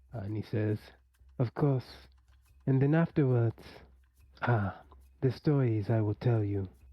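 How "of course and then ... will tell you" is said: understated, low-key, reserved manner. Narrating Hugh greeting Nosimbo, in a quiet voice. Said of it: "greets Nosimbo in his own kind of like quiet way".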